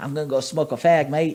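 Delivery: put-on Australian accent. Retelling what a man from an Australian family said: Australian accent. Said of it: "I don't know why that accent just came out that way".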